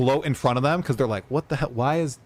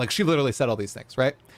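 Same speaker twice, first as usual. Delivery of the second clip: plain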